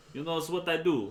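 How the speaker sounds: loud, put-on Brooklyn accent with Jamaican flavour. Voicing a game character giving tips: Brooklyn Jamaican accent. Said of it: "Get that Brooklyn Jamaican accent going on".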